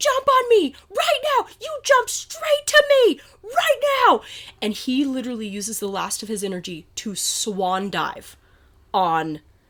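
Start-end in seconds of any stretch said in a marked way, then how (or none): 0.0-4.2 play-acted, very high-pitched screaming. Retelling urging the swimmer to jump onto the raft: imitating own past screaming. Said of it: "And I'm screaming".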